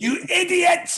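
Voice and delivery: very high, angry sat-nav voice. Speaker acts out a joke GPS with really aggressive directions, aggressive GPS voice. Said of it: "really aggressive directions".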